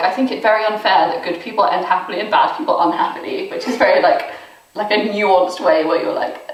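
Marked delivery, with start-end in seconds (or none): none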